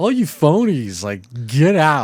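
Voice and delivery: put-on slurred drunk speech. Retelling a movie scene where a character kicks everyone out: imitating a drunk man. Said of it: "drunk and he kicks everybody out".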